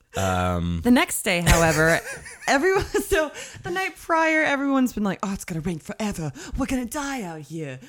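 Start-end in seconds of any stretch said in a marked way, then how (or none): 5.3-7.8 put-on old woman's voice, faster, quieter. Retelling what everyone was saying the night prior about the rain, doing a Colleen impression. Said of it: "That was my Colleen impression".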